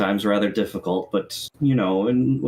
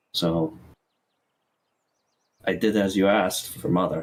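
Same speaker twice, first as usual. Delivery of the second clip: lowered, deeper, stepped-down character voice. Voicing a character who addresses Mother: lower voice. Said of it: "step down into a lower voice and say".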